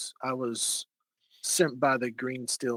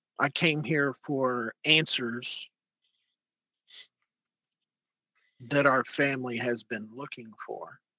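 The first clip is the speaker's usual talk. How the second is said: voice deliberately dropped lower. Answering why they came here: lowered quiet voice. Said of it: "I I'll lower my voice".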